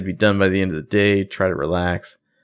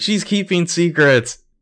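mock very high, begging, pleading voice; 10 semitones higher than usual. Retelling a TV scene where Spencer pleads with Veronica: imitating someone pleading. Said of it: "she's pleading".

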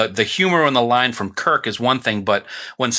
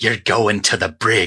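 put-on Scottish brogue accent; 2 semitones lower than usual. Recalling one of the funniest lines, quote Kirk impersonating Scotty in his Scottish brogue. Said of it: "Kirk impersonating Scotty in his Scottish brogue".

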